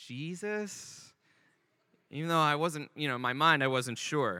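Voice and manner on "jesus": hesitant, very timid, quiet voice. Retelling being prompted for a password, the speaker recalls their answer: acting out a very timid reply. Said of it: "I was sort of very timidly".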